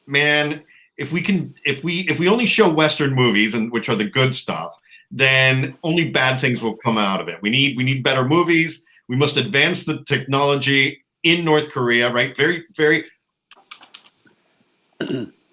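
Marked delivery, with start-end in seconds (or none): none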